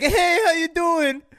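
mocking high-pitched voice. Retelling driving past Ilya and greeting him, mocking imitation of Ilya. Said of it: "Why you gotta make fun of me like that?".

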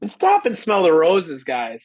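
roses in a sing-song Minnesota accent. Telling the listeners to stop and smell the roses, Minnesota accent. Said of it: "You sounded like you were from Minnesota when you said roses".

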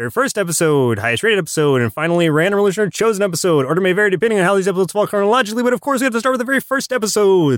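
rapid-fire, rushed, very fast rattled-off delivery. Podcast host introduces the show's episode segments: very fast. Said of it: "I have to say that really fast".

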